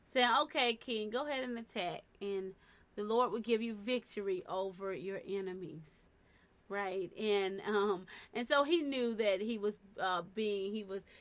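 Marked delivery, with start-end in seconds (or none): none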